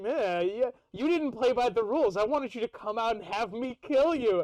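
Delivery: play-acted cross, irritated, angry, annoyed tone. Retelling a scene from a book, imitating Nicodemus, mad. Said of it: "Nicodemus is, like, all mad".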